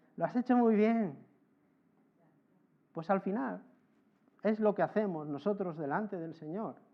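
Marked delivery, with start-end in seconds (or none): 0.2-1.2 play-acted, ironic, sarcastic, insincere praising tone. Repeating a daughter's praise of a bike ride: imitating ironic praise. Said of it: "me lo dice como irónicamente".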